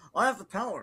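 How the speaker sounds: rushed, tossed-off delivery. Imitating how the line was said in the trailer: imitating a rushed delivery. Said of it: "he said too quickly".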